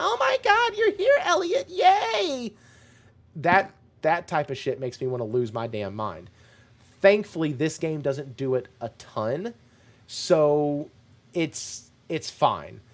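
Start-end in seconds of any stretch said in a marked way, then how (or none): 0.0-2.5 put-on high-pitched voice, much higher. Discussing a game's voice acting, mocking a character, annoying high-pitched Faye voice. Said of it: "that annoying high pitched".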